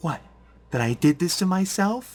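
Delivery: put-on high, very angry, upset little girl voice. Voicing a character answering an accusation: very angry, upset little girl's voice. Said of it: "little girl's voice".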